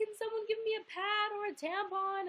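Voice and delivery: mock hysterical crying, very high and loud sobbing. Retelling begging backstage staff for help, imitating own hysterical crying. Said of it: "I was hysterically crying".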